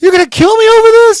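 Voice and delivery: shrill, very high, very loud scream. Retelling when a man screamed questions at him, retelling his own screaming. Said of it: "I'm screaming that to him".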